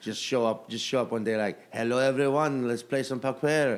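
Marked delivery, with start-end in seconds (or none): 1.7-3.7 put-on French accent. Acting out a poker player who shows up speaking oddly: put-on French accent. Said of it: "Why are you speaking in a French accent?".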